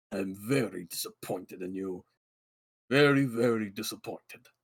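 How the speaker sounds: grumpy, grouchy, disappointed, reproachful tone. A voice answers in the listener's head, grumpy. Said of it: "He's fucking grumpy".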